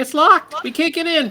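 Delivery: tiny, very high-pitched squeak. Narrating a scene, the storyteller voices someone knocking at a locked door, squeaky voice. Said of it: "and then a squeaky voice from the other side".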